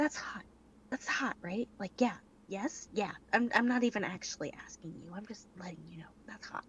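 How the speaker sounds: playful, soft, lighthearted sideways stage whisper. Voicing a character leaning over to whisper to another: whispering in character. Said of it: "whispers to Jefferson".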